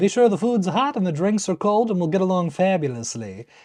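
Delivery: put-on mid-Atlantic accent throughout. A clip from the show, given as an example of a transatlantic accent. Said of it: "that transatlantic accent".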